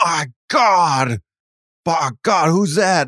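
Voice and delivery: stunned call. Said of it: "Jim Ross would go".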